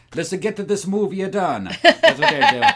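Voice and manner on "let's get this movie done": mock Italian voice, put-on Italian accent. Speaking as the filmmakers rushing to finish the movie, in an italian accent. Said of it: "That was a pretty good Italian accent".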